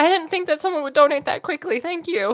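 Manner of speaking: crying through the words. Thanking a viewer who donated quickly, crying. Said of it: "That's so stupid that I'm crying".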